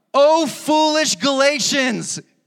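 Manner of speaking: frustrated high outburst. Reading Galatians verse one aloud: imitating frustrated Apostle Paul. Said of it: "listen to how frustrated the Apostle Paul is".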